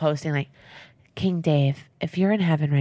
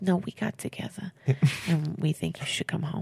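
soft, hushed put-on Italian accent; 7 dB quieter than usual. Acting out a mom telling her child to come home, in an Italian accent. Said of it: "And she's Italian, by the way, now. Not Southern".

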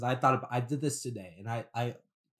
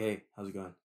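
deliberately put-on, deepened, low voice; 4 semitones lower, 4 dB quieter than usual. Retelling greeting young guys walking by: imitating own deepened voice. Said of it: "I deepened it for some reason".

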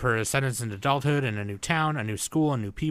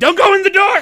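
shrill, shrieking, very loud screaming; 14 dB louder than usual. Describing a friend who yells at the screen, imitating someone screaming at the TV. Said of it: "the bitch screaming at the TV".

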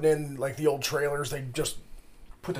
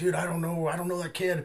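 imitated panicked, freaking-out voice; 3 semitones higher than usual. Retelling how a man at the door reacted: imitating someone freaking out. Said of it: "he's just freaking out".

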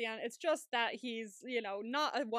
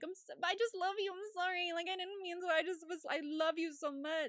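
mock whiny voice, pitched much higher; 7 semitones higher than usual. Speaker describing a man confronted by Boston, imitating whiny pleading. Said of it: "whiny towards Boston when they confronted him".

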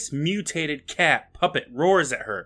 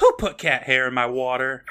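ordinary talk

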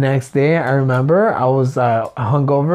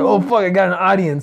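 put-on dog voice, higher pitched; 5 semitones higher than usual. Joking about the dog noticing the flashlight on her: voicing Mochi the dog. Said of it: "She's like".

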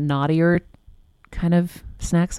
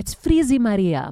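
put-on Greek accent; 4 semitones higher than usual. Remembering her mom struggling with her hair, quoting her in mom's greek accent. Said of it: "my mom would say in her Greek accent".

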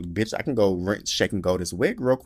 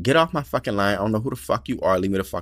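acted, irritated, annoyed outburst with cursing. Retelling a phone call from an unknown caller: imitating own annoyed outburst. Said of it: "I was like, annoyed".

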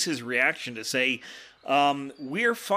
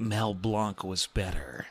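breathy, slow, drawn-out half-whisper, close in; 7 semitones lower, 4 dB quieter than usual. Speaking in character into a fading enemy's ear: half-whispering. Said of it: "I whisper in his ear".

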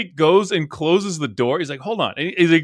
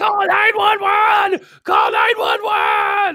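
acted-out scream, much higher and slower. Speaker retells a man running toward a van, retelling a scream. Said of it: "he starts screaming at like the title".

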